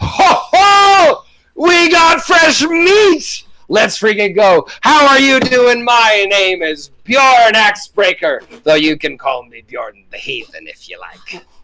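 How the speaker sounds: big, booming, swooping, roaring bellow. A man setting down hot metal greets the players as Bjorn Axebreaker, bellowing. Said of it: "bellows in your general direction".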